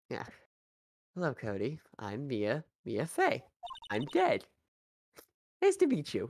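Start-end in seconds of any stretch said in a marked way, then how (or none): 1.1-6.3 slow, drawn-out voice with big swooping pitch swings. Voicing a game character again after a misread line: voicing Mia Fey. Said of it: "let me try that again".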